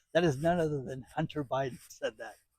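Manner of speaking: words breaking up, laughing through them. Naming who predicted job losses to AI, laughing while talking. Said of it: "I can't do it without laughing".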